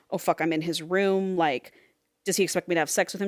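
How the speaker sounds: ordinary delivery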